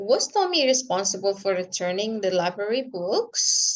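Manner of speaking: pitch rises at the end on "books". Explaining yes-no question intonation with an example: rising pitch on books. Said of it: "jadi ujungnya itu naik dia".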